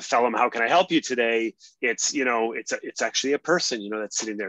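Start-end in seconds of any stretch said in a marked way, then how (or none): 0.0-1.5 mock robotic, digitized machine voice. Contrasting a live security officer with an automated system, mock robotic digitized voice. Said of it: "sort of digitized voice coming at you saying".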